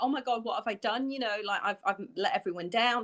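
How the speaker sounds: usual speaking voice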